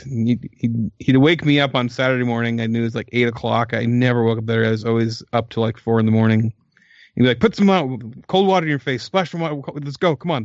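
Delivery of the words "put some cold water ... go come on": put-on old-timer Brooklyn accent, pitched up. Retelling how Pete woke him early on Saturdays, imitating Pete's old Brooklyn accent. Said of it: "He talked like a like an old Brooklyn guy".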